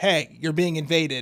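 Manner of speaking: plain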